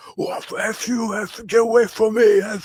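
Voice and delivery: shrill, very high, furious angry yelling. Retelling how a man refusing a debate shouted at them, imitating Myron shouting. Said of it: "he starts shouting at me like".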